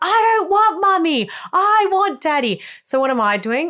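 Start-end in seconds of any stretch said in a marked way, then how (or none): 0.0-2.6 put-on very high, drawn-out, hysterical child's tantrum scream. Retelling her child's tantrum on the floor, imitating her child screaming.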